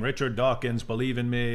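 plain

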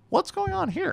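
caricatured voice, very high and creaky.

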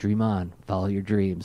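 very warm, encouraging voice. Retelling an autograph meeting, quoting the voice actor: warm Peter Cullen voice. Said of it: "in that very warm Peter Cullen voice".

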